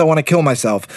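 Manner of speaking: plain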